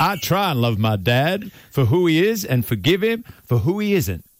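put-on in-character American accent, like a coach.

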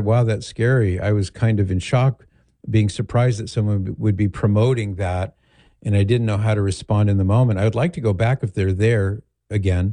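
plain

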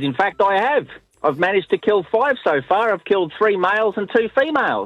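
puffed-up voice with attitude. Speaker retells a man answering a woman's snide question: retelling his reply with tone. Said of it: "with a bit of tone in his voice".

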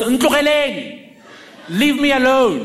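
high-pitched shout. Telling a family story, the speaker acts out a woman yelling from the window at a car. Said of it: "and yells".

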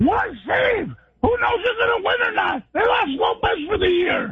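fast, hoarse, raspy, strained shouting. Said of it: "I wish he sounded good".

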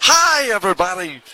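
mock old-time sports announcer voice. Describing an old Cubs broadcaster's distinctive sound: Harry Caray voice.

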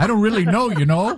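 put-on Canadian accent. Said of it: "That sounded more Canadian".

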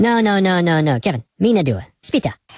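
squeaky cartoon voice speaking gibberish. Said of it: "the little Minions that talk like this".

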